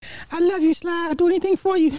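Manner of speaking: very high, poorly done, put-on girl voice.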